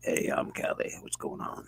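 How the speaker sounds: deep, gravelly, near-whispered hush. Imitating another speaker's voice: imitating Callie's low gravelly voice. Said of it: "he's got that really nice gravelly voice".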